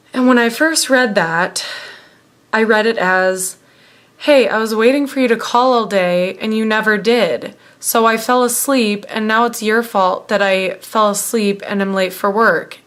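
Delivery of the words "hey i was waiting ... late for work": ordinary talk, nothing marked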